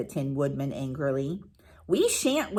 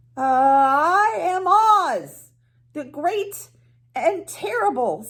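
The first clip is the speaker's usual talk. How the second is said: frightened, quavering, trembling, pleading voice at very high pitch; 10 semitones higher, 4 dB louder than usual. Reading the story aloud, the narrator voices Oz answering the woodman: Oz's trembling voice. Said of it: "said the little man in a trembling voice".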